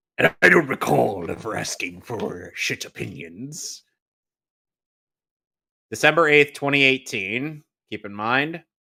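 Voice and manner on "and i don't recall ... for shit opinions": put-on comic-book monster character voice. After asking a friend if the voice is doable, trying out a Venom voice. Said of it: "Do you honestly think that I could do a good Venom voice?".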